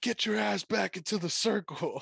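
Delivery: play-acted rough, raspy, shrill, very high referee scream. Retelling a referee yelling at a fighter: imitating a referee screaming. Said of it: "He's literally screaming".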